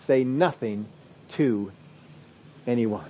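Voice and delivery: acted, severe, firm, almost angry stern tone. Explaining a Bible passage, retelling Jesus's stern, almost angry order. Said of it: "That's how he said it".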